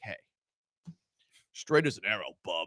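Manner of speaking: voice dropped down deep. Speaker shows what he should have said in that situation, in a deep voice. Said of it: "with a deep voice".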